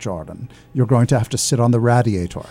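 put-on thick Irish accent. Retelling what he said to the speaker in class, heavy Irish brogue. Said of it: "he had this very heavy Irish brogue".

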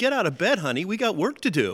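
loud, sassy fairy godmother voice. Describing the role, the performer voices the fairy godmother: sassy fairy godmother voice. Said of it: "A sassy good fairy".

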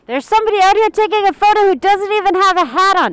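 high-pitched shouting yell. Outdoors, calling out about someone taking a photo without a hat: yelling. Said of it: "Why am I yelling?".

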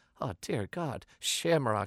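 gushing, melting, swooning voice. A nun reacts to a pupil's shamrock in the classroom; swooning. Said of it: "she swooned".

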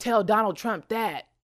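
loud, high shout. Retelling what the attacker yelled from his van, retelling a yell. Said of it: "and he yells".

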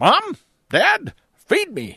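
very high, loud, swooping barking call. Describing young birds begging their parents for food, voicing their call as a bark. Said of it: "they have this sort of almost a bark saying".

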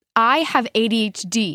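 said with open pride. Lily, finally getting her turn in front of the class, speaks proudly. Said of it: "I said proudly".

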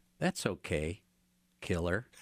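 bone-dry, unbothered deadpan, low. Retelling someone's reply to the speaker's apologies, retelling a deadpan remark. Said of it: "complete deadpan".

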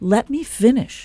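firm schoolmarm voice. Retelling the moment a man kept cutting you short, best schoolmarm voice. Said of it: "I put on my best schoolmarm voice".

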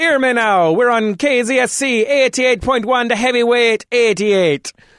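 put-on, imitation Jamaican patois accent. Imitating the KZSC radio station voice, imitation Jamaican patois accent.

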